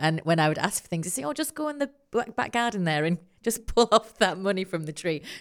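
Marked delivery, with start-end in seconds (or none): 1.2-5.2 dry, mocking, sarcastic fatherly tone. Speaker recalls what their dad said when asked for things, retelling dad's sarcastic line. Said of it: "It's obviously quite sarcastic".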